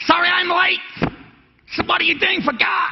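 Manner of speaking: very high-pitched put-on New York accent. Repeating a preacher's words from the aisle, in a New Yorker accent. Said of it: "New Yorker accent".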